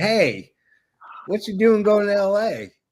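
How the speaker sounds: put-on Southern accent. Retelling chatting with a man on a plane to l.a., talking really southern. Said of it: "Started talking really southern".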